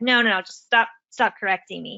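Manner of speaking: mock angry child voice. Retelling the younger brother protesting the correction: imitating an angry child. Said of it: "he kinda got mad about that".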